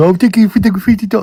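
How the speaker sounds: very high, cutesy little voice. Showing the host how they thank donors, imitating a cute voice. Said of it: "when you do that real cute thing".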